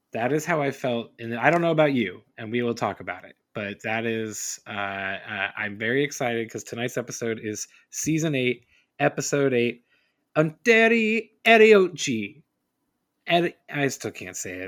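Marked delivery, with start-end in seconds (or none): 10.3-12.4 very high, very loud, shrill Italian accent. Host announcing tonight's episode title to a co-host, Italian accent. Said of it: "you're saying it with an Italian accent".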